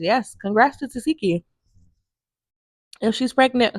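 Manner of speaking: talking while eating, mouth full. Chatting to viewers while eating grapes, talking while eating. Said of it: "sorry y'all, I'm eating some grapes".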